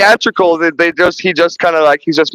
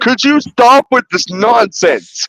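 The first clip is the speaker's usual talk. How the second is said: put-on yell, higher; 5 semitones higher than usual. Retelling a movie scene where the warden yells at Ripley: imitating a yelling warden. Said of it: "he's yelling at her that".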